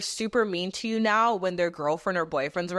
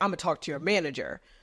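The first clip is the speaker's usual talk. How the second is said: mocking tough-guy tone, lower; 3 semitones lower than usual. Retelling a restaurant customer's threat to the server: imitating a tough-guy act. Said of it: "the guy tries to act all tough guy".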